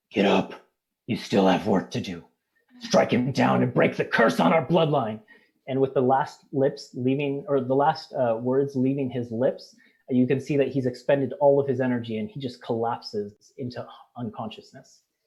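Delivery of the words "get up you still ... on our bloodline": rough, gruff, rough-edged voice. Game master voicing a wounded character to the players, gruff Discord voice. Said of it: "says in a gruff voice".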